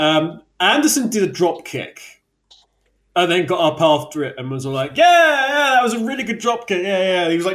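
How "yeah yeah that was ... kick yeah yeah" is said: high, pitched-up, boastful self-cheering. Retelling a drop kick, imitating Anderson cheering himself. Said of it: "cheering himself, bigging himself up for it".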